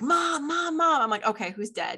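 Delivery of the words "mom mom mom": put-on child voice, very high screaming. Retelling her son running across the field calling her, imitating Joseph screaming. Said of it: "came running across the field one day screaming".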